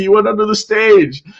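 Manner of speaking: excited, insistent, high and loud.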